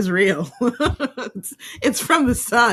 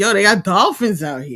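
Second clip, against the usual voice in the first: very strong, put-on New York street accent; 4 semitones lower than usual. Retelling a video of a man spotting dolphins: imitating a strong new york accent. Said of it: "this guy who sounds, like, very New York".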